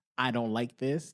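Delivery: ordinary talk, nothing marked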